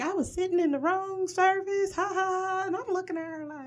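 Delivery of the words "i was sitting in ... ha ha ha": put-on mock-joking tone, much higher-pitched. Retelling how a woman said something jokingly: mock-joking tone. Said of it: "when she said it jokingly".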